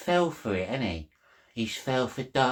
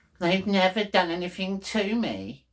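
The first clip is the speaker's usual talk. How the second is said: play-acted smug, pitched-up little voice, full of itself; 6 semitones higher than usual. Speaker imitating how another man said it, mocking a smug little voice. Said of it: "says that in his smug little voice".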